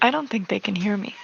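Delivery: quiet whisper. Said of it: "you're whispering right next to the mic".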